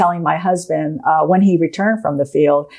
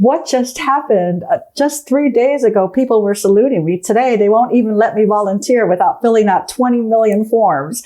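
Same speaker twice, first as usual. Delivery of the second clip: shaken, near-tearful voice, close to crying; 4 semitones higher than usual. Retelling a phone call from Megan after retirement: imitating Megan almost crying. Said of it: "kind of almost, like, crying, saying".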